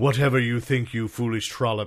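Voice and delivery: put-on little satanic villain voice. Retelling what a comic villain said, in a satanic little villain voice. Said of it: "some satanic little".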